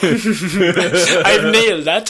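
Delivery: little giggle with laughter in the voice. Imitating someone who does a little giggle to himself. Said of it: "he does that little giggle to himself".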